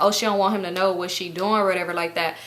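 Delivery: normal talking voice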